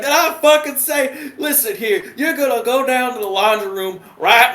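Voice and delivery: put-on strongest Southern accent, pitched very high. Quoting a petty officer talking to a seaman recruit, in a thick southern accent. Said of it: "He's got the thickest Southern accent I've ever fucking heard".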